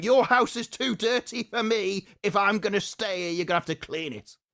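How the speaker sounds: high, mocking, bossy voice. Retelling a film remake, mocking the princess who bosses the dwarves. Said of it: "some miserable cow comes along, starts going".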